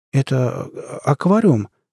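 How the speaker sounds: slightly wavering, trembling voice. Shaking a young man's hand and greeting him, in a slightly trembling voice. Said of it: "немного дрожащим голосом проговорил Лука".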